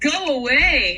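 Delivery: stern, angry, yelling voice. Speaker retells what they yelled at Dean, retelling a yell. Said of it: "I yelled in a voice of true communism".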